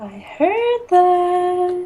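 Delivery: high, slow, muffled sing-song voice.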